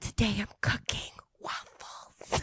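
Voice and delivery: put-on asmr whisper. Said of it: "I'm gonna be [name] in her A S R voice".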